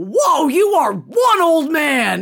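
put-on play-acted shrill, very high, slow, stretched-out child's shout. Retelling a child yelling across a glasses store: imitating Keegan screaming. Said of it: "Keegan screams out".

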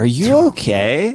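put-on condescending voice. Describing a stranger checking on you after getting hurt in public, imitating a condescending stranger. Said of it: "looks at you like condescendingly and is like".

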